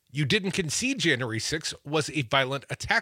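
ordinary talk

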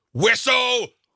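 high, loud shout. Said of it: "another great Roy Kent shirt, which reads".

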